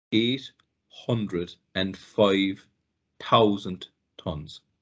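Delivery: very slow delivery. Addressing the ordinary listener, saying the number slowly. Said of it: "I'm going to say this slowly".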